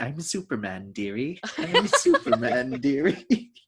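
slow, drawn-out character voice with wide pitch swings. Quoting a line stuck in one's head: Robin Williams impression. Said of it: "my brain was just on a loop of Robin Williams going".

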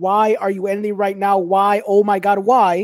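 angry, loud, frustrated screaming yell. Retelling watching a show on Sunday: imitating screaming at the TV. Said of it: "I was screaming at the television".

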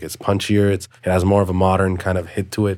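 ordinary talk

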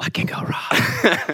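slow, quiet whisper under the breath.

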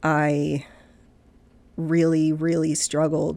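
tearful voice, starting to break, near crying. Describing a hard time in life, starting to cry. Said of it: "now I'm starting to cry".

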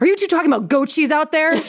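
put-on angry voice. Retelling a sleepwalking mom's outburst at her talking kids: imitating someone angry. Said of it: "really angrily".

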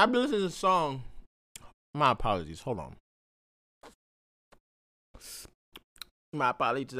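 chewing while talking. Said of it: "I had to finish that gummy".

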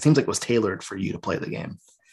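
ordinary talk, nothing marked

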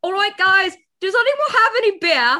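very loud, high, badly done British accent. Retelling a line from a vampire rock star character: bad British accent. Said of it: "very bad".

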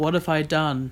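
put-on flat, blank, bored line reading. Speaker retells an actress's line from a trailer, imitating a bored line reading. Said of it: "she just goes in the most bored tone I've ever seen".

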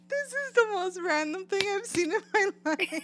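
high-pitched, laughing through the words. Reacting to a surprising book award result, laughing while talking. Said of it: "Why are you laughing?".

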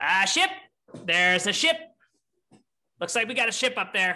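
lookout-style call, called down from above. Voicing a lookout calling down from the crow's nest: yelling down from a crow's nest. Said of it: "you hear her start to, to yell down".

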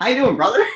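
very high, awkward, trying-too-hard tone. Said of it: "walking like the whitest person ever".

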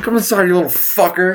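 fake high-pitched yelling.

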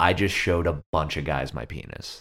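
normal talking voice

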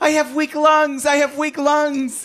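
very high, squealing, repeated shout. Joking about a man falling in the water: imitating someone shouting. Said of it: "he keeps shouting".

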